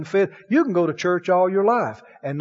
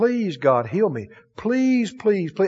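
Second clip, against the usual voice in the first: mock pleading, begging tone. Speaker describing people who beg God for healing, imitating people begging. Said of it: "so many people are just begging".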